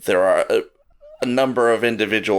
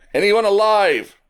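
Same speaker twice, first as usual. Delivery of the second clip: very high-pitched calling cry; 12 semitones higher, 4 dB louder than usual. Voicing rescuers searching from the jungle: crying out. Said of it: "You hear cries out from the jungle".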